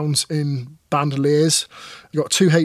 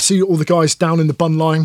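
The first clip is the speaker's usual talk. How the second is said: normal talking voice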